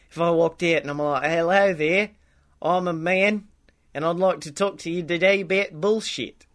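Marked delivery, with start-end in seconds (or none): 1.3-6.3 pleasant New Zealand accent. The speaker tries out a possible accent for the podcast, Kiwi accent. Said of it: "a nice a Kiwi thing going on".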